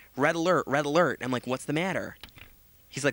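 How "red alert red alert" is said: plain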